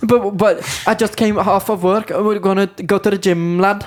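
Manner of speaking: put-on Liverpool accent. Two speakers improvise a scene, talking scouse to each other: scouse accent. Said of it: "we'll talk Scouse to each other".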